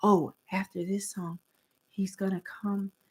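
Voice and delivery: low, hushed, quiet whisper. Retelling what employees whispered near her, retelling a whisper. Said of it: "they're like whispering".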